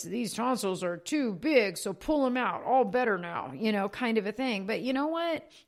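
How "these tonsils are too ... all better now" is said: put-on primitive caveman voice. A parent voicing the old doctors' thinking about big tonsils, in a caveman voice. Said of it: "that was my caveman voice".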